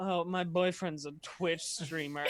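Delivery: thick, biting, heavily sarcastic boastful tone. Retelling what she says after work setup, imitating someone being sarcastic. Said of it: "very, like, sarcastic".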